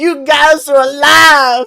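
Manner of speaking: piercing, very high, very loud scream, "alive" drawn out. The narrator voices Ophelia screaming as she pulls two others into a hug. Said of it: "just screaming".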